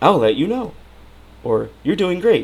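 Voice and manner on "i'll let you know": know lifts up high, upspeak. Complaining about upspeak while demonstrating it: upspeak rise on know. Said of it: "up speak. You know that up speak, where it's it sounds like".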